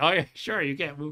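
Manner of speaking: sarcastic, mocking tone. Acting out how he always answers your common complaint when you play games, imitating someone's sarcasm. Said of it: "like sarcastically".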